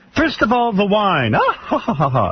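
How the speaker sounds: laugh read out as words, not laughed. Reading a quoted interview answer aloud, imitating a written laugh. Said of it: "It says laughs".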